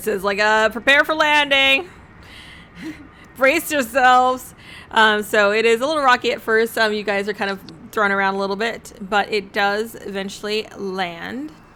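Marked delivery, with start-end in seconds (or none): 0.4-4.5 booming, far-carrying announcer voice. Narrating a castle landing to the players, a voice announces over the castle in a booming voice. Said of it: "a booming voice come out over the castle".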